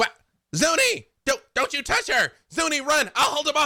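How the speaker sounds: very high, parrot-mimicked voice. A bird repeats a warning it overheard, parrot mimicking Freely's voice. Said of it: "you all very much hear Freely's voice telling Zuni to run".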